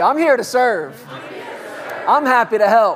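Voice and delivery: excited. A speaker leads listeners in repeating a phrase, now saying it with excitement. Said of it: "with some excitement about you".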